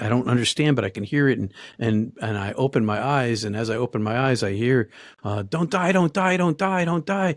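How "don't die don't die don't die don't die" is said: put-on high screamed pleading, repeated over and over. Recounting waking up to a man gripping their collar, retelling him screaming. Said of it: "and it's screaming".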